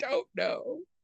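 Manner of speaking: very high, soft, squeaky voice. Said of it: "I was like".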